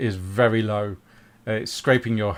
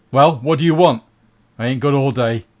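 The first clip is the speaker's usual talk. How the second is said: loud, big, booming dwarf voice; 3 semitones higher, 7 dB louder than usual. Narrating a scene, voicing the figure seated on a huge throne: booming voice. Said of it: "You hear a booming voice from a man or a dwarf".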